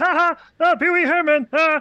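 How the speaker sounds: very high, very loud, drawn-out squeal. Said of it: "for some reason now he's like".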